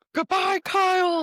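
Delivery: very high-pitched, badly faked put-on British accent. Asked to do the actual impression, have a go at it as a bad attempt at a British-accented impression. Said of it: "Can you do the actual impression of it?".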